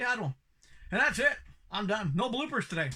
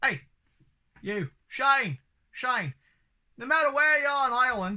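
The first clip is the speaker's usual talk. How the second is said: put-on accent drifting into Australian; 5 semitones higher, 5 dB louder than usual. Giving shout-outs to listeners and comic shops, accidentally Aussie-sounding accent. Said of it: "why do I sound Aussie?".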